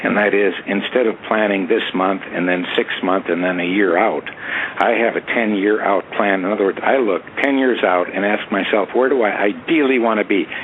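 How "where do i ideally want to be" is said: stress on ideally, with a falling tune. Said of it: "I emphasize the word ideal".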